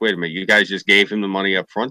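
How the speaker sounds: ordinary talk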